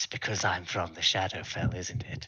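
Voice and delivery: hushed whisper, under the breath. A character leaning close to a compass, whispering. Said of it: "he whispers in abyssal".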